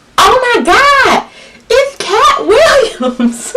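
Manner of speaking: excited, very high, slow, drawn-out yell.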